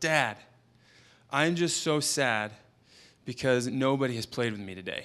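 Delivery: mock crying child voice, words through tears. Father retells what his son said through tears, imitating a crying child. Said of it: "after back and forth through tears".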